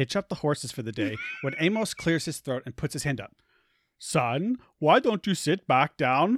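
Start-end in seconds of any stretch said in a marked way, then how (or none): 4.0-6.4 put-on slow speech in an Indian accent. Reading a story aloud, the speaker voices Amos in an Indian accent. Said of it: "Why are you Indian?".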